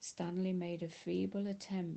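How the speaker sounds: plain reading voice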